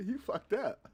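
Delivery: put-on very high, amused, laughing voice. Retelling what his wife said while laughing at him: imitating wife laughing. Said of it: "my wife was laughing at me last night".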